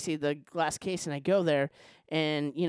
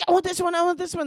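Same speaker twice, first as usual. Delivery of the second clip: put-on yell, higher, louder, faster; 13 semitones higher, 5 dB louder than usual. Imitating people yelling at the lady while trying to get served, retold yelling. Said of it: "They're like yelling at the lady".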